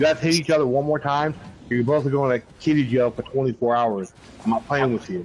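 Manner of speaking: normal talking voice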